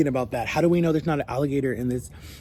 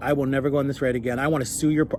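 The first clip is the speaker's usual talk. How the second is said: usual speaking voice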